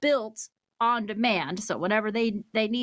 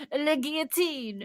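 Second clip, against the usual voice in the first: clumsy, unconvincing put-on French accent; 5 semitones higher than usual. Introducing today's topic, the guillotine: bad French accent. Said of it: "that's not a good French accent".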